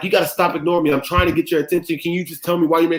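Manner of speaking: put-on, high, worked-up, freaked-out rant. Retelling a timeout outburst at a referee, imitating own angry outburst. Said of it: "I spaz out".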